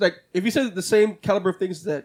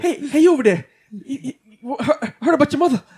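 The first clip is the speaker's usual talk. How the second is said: put-on Boston accent, much higher and louder; 7 semitones higher, 4 dB louder than usual. Trying another Boston accent while joking around, doing a Mark Wahlberg Boston accent. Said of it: "Boston accent".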